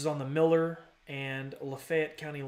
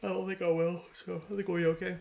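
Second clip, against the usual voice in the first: pitched-up speech spoken mid-yawn; 5 semitones higher than usual. Giving a thunderstorm update while exhausted, yawning. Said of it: "Sorry for yawning".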